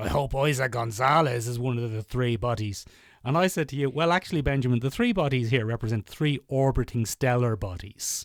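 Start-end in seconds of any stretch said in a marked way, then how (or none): 0.0-2.8 sleazy, lecherous, lewd tone. Quoting the person he's talking to, doing an imitation of his lecherous voice. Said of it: "an imitation of your lecherous voice".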